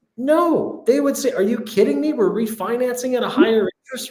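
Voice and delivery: sarcastic tone with mock disbelief. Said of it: "I'm being sarcastic here".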